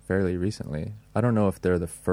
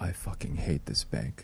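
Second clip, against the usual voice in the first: mock mutter, much quieter; 7 dB quieter than usual. Speaker retells a woman at the bank leaving, imitating her muttering. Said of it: "muttered to me like".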